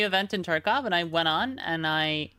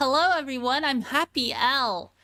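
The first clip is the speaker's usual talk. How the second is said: fake cheerful, pitched-up streamer voice; 6 semitones higher than usual. Streamer jokingly introducing a cheerful alter ego to viewers, fake cheerful happy streamer. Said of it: "I'm gonna be the cheerful, the happy streamer".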